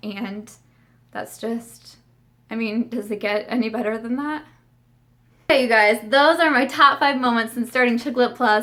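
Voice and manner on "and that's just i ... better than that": wavering, cracked, warbly voice, holding back tears. Blogger thanking friends and supporters, in a cracked, warbly voice. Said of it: "my cracked and warbly voice".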